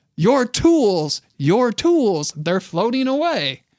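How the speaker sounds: high, drawn-out, swooping scream with enthusiasm. Retelling a sailing accident in the ocean: imitating someone screaming. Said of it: "he screams".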